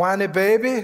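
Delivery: good put-on Cajun accent. Retelling what a woman said to a man on the way to eat, good cajun accent. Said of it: "In a good Cajun accent".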